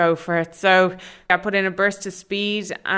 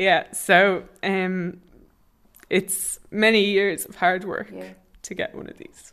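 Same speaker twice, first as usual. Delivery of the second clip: a little emotional, choked-up voice. Answering about sharing the medal with others: a little bit emotional. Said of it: "a little bit emotional now".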